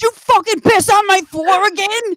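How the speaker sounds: very high, loud scolding voice. The speaker imagines using the mad-at-your-dog voice on some guy, in a mock-mad voice used on dogs. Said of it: "your voice that you're use when you're mad at your dog".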